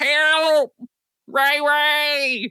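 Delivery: very high, frantic, desperate cry. Narrating cries heard from the kiddie pool in the barn: crying for help. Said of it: "heard the cries of".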